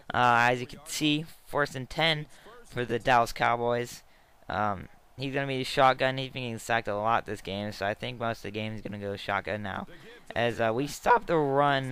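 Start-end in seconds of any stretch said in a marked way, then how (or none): 10.3-11.9 voice cracking, much slower pace. Commentating a football game, voice cracking. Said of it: "voice crack, I don't even care".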